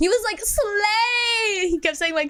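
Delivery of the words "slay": mock drunk speech, higher pitch. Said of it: "he was that kind of drunk".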